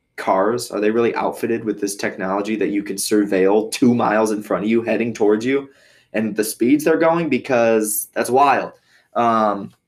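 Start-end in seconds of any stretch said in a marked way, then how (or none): none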